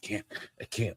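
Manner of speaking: put-on huffing and puffing. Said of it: "huffing and puffing".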